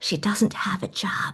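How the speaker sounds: whispered, slow and confidential. Retelling how mom leaned to the bank teller: imitating mom's whisper.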